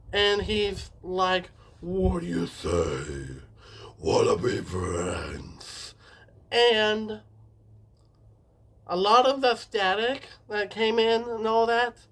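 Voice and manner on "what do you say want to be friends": really deep, very low voice. Retelling a scene, quoting the voice that came from the TV, in a deep Mister Puzzles voice. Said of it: "a really, really deep voice commenced".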